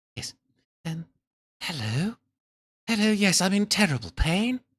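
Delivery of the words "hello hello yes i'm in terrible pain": put-on lowered, breathy woman's voice, slower. Speaker voices the woman in the scene: lowered, breathy woman's voice. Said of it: "Maybe make it a little bit more breathy".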